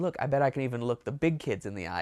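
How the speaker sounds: plain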